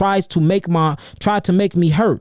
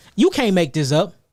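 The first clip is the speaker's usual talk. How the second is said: ordinary talk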